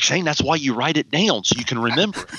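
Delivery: put-on mentor voice like an old coach. Quoting a first coaching mentor's advice in a Don Neff voice. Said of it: "In that Don Neff voice, he'd be like".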